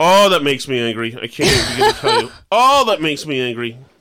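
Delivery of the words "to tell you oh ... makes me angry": normal talking voice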